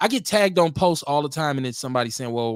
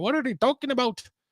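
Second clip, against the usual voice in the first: horrible put-on Irish accent, high and swooping; 9 semitones higher than usual. Speaker voices how irish people react, in a bad irish accent. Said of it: "that was a horrible Irish accent".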